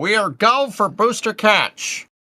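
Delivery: very high pitch, words stretched and drawn out. Doing an impression that chat requested, saying the requested line: John Insprucker impression. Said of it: "that was a great impression, [name]".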